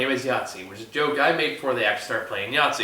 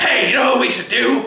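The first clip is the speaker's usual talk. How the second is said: put-on cheery grandpa voice, higher and louder; 12 semitones higher, 5 dB louder than usual. Retelling how the grandpa walks in: imitating a smiley grandpa. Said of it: "he all smiley".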